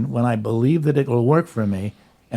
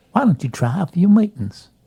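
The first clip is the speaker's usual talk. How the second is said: put-on Arkansas woman's voice, higher; 6 semitones higher than usual. Retelling what the family therapist said: imitating Darla Norton's voice. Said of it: "but she talked just like this".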